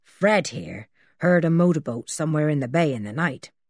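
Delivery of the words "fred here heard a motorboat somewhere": usual speaking voice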